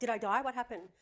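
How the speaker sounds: put-on panicked crying. Retelling waking in an ambulance, imitating own panicked crying. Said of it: "freaking out, crying".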